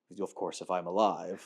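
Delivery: ominous, foreboding delivery with heavy weight. Retelling how Ian McKellen said he'd return: ominous Ian McKellen impression. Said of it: "the ominous way he'd be like".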